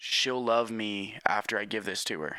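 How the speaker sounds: ordinary talk, nothing marked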